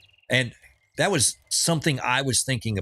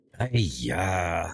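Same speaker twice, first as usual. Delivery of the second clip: put-on old man voice, lower; 5 semitones lower than usual. Recalling a character from the movie Gremlins: imitating the old man from Gremlins. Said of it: "the old Chinese guy from the movie Gremlins".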